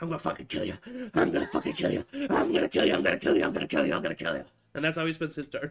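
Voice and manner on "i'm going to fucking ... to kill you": very low, rough, creaky, swooping goblin monster voice. Voicing a goblin who repeats a threat the whole turn: voicing a goblin. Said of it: "he can speak, and the whole time he's just".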